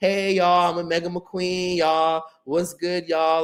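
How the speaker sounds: derisive parody vlogger-style voice, high and slow. Retelling how she made videos with a rival: mocking imitation of her video greeting. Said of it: "now you're making videos linking up with him, like".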